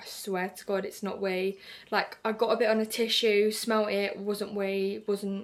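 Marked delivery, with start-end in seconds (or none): none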